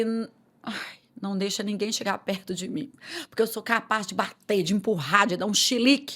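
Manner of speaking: usual speaking voice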